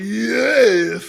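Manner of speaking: very loud, dragged-out, creaky, dopey croak. Retelling a reaction to catching a rare Pokemon: imitating own dumb-sounding voice.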